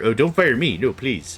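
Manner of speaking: pleading, begging improvised put-on voice. Acting out an employee begging not to be fired: made-up voice of a pleading employee. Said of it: "I'm the voice that I just made up right now".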